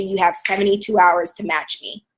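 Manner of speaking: usual speaking voice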